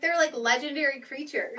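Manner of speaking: usual speaking voice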